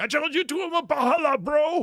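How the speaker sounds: high yell in a put-on English accent. Retelling a grown man's yelled challenge: imitating a man yelling in an English accent. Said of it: "in an English accent".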